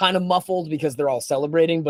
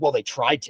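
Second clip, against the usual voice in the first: mock-curt, sharp, lower-pitched delivery; 3 semitones lower than usual. Retelling how a man answered in the tent, retelling a sharp reply. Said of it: "says it like so sharply".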